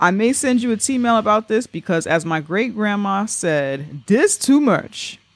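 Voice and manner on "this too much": bad Southern accent, badly done, pitched up. Quoting what a great grandma said: bad Southern accent. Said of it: "Forgive me if that was a bad Southern accent".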